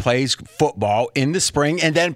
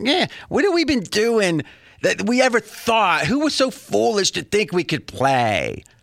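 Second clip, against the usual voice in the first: put-on whining moan, high and swooping; 6 semitones higher than usual. Acting out what they would say, speaker puts on a whiny voice. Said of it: "this is me now being them, I'll get a whiny voice".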